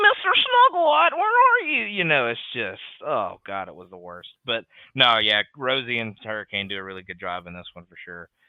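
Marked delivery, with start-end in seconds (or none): 0.0-1.8 put-on very high, blaring, very loud, shrill kid voice. Complaining about a child on television: imitating an annoying child's voice. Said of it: "this child has the most annoying voice".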